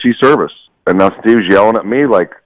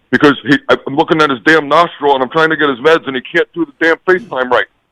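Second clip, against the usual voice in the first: put-on authoritarian barking voice, higher pitch; 9 semitones higher than usual. Imitating Steve's phone order on request: imitating Steve barking orders. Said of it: "Do his imperson-".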